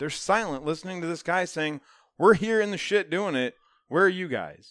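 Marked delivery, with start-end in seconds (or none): 2.2-4.7 play-acted, loud screaming and yelling rant. Recounting a man yelling at people who stay silent: retelling a man screaming. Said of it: "And he's screaming at them".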